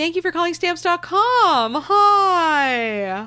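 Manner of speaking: very high, loud, acted fake-perky voice, sounding dead inside. Speaker recalls answering calls at a former job, in a dead-inside perky voice. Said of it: "my I'm dead inside perky voice".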